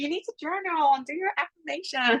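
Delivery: high, put-on American accent, podcast-host style. Mimicking people who told them to journal, in an American podcast voice. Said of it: "I don't know why I do it like an American voice".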